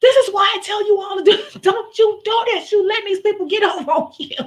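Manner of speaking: put-on, very high, shrill, loud near-screaming rant. Retelling a reaction to a technician: imitating almost screaming. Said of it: "I was literally almost screaming at this technician".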